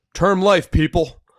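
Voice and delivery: very high, very loud, shrill battle cry. Reading out what he wrote in all caps, retelling a shouted rally cry. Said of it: "in in that voice".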